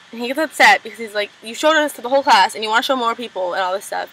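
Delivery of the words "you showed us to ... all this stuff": normal talking voice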